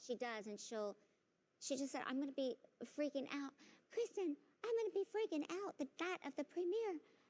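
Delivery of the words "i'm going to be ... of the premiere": high, little put-on voice. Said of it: "She does that little voice".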